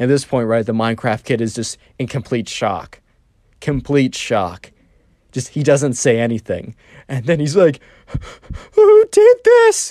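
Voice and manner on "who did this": mock tearful whimper with rage, very high, raised. Retelling the Minecraft kid's reaction in complete shock, imitating a crying, whimpery voice. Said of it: "Kind of like a crying, whimpery voice".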